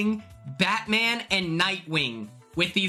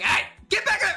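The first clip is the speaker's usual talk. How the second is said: mock yelling, much higher and faster; 10 semitones higher than usual. Describing a sheep competition, retelling how she yelled at the others: retelling a yell. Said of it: "She's yelling at them".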